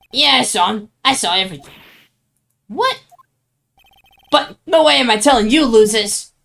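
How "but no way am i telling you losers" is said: fake New York accent, higher pitch. Voicing a character in a role-play scene, put-on new york accent. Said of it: "I'm giving everyone a New York accent".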